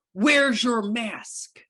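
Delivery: put-on aggressive angry voice. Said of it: "really angry, very aggressive".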